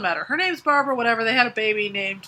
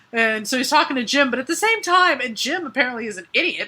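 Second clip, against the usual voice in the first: ordinary talk, nothing marked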